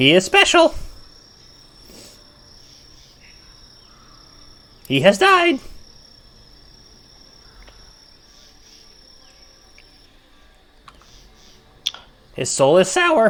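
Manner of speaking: very high, swooping, birdlike raven voice. Voicing a talking raven for players asking about the bugbear, in a raven voice. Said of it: "I was trying to set on a good Raven voice".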